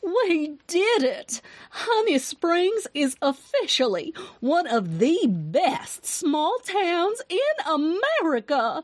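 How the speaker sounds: high, drawn-out, triumphant crowing voice. A woman at the counter speaks up, crowing. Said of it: "she crowed".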